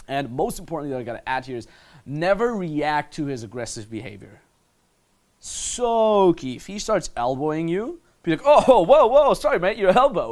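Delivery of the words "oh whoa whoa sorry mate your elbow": very loud, bright, breezy, friendly, lighthearted tone. Showing how to answer an elbow with a light, friendly line: friendly, lighthearted apology. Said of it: "You see what I just did here?".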